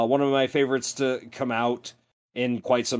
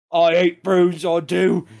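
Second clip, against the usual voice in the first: loud, put-on English hard-man gangster accent; 6 semitones higher, 6 dB louder than usual. Repeating the joke about hating prunes: English mobster voice. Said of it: "Are you doing the English mobster?".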